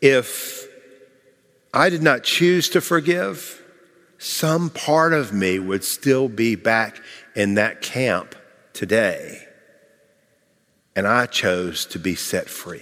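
soft, secret-sharing, hushed stage whisper. Retelling how Ruth answered a question after her talk: imitating Ruth's half-whisper. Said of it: "and in a whisper said".

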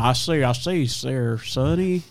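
very slow cartoon rooster voice, each word dragged out. Recalling a cartoon's big chicken for the others: Foghorn Leghorn voice. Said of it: "Do you remember that cartoon, the, the big chicken".

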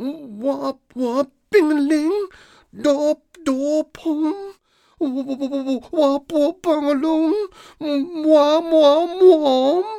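high, ringing put-on voice. A bowing figure speaks up while acting out a story, in a high-pitched voice. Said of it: "A high-pitched voice rang out".

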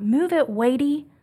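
put-on high little-kid scream like a yelling toddler. Retelling a two-year-old son yelling from the back seat in traffic: imitating a little child screaming. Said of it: "this little precious voice in the back seat scream out".

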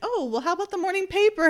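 sugary-sweet sarcasm, high and rattled off quickly. Praising how she delivers her lines, imitating her sarcasm. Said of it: "She's being very sarcastic".

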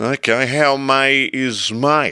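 put-on very slow, slurred, drunken-sounding words. The narrator, after whiskey and tranquilizers, answers Mr. Hogart; slurred. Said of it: "I slurred".

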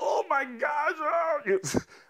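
mock very shrill, stretched-out, frightened scream. Recounting an aborted plane landing, retelling screaming in the back of the plane. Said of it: "I screamed in the back of the plane".

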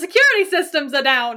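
acted old-style mid-Atlantic transatlantic accent. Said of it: "it's in a transatlantic".

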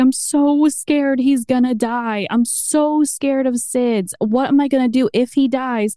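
acted sobbing with a shaking voice. Recounting words said to a nurse at a checkup, retelling sobbing and shaking. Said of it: "I sobbed, like shaking with the nurse".

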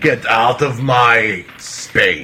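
haughty, snooty royal cat voice. Voicing a cat that thinks it is royalty: haughty royal cat voice. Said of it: "like a cat thinking he's royalty".

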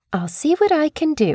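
put-on British woman's accent. Retelling what a hospital lady said when asked for a room: imitating a British accent. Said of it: "she did it with a British accent".

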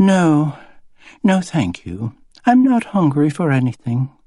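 clearly fake movie-style English accent, pitched high. Narrator reading a woman answering a man who asks if he can help: fake english accent. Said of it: "She spoke with a sort of fake English accent".

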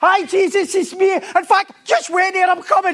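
put-on, thrilled, eager, very high, loud excitement. Retelling Peter greeting Jesus, acting out Peter's excitement. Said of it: "And he's getting all excited".

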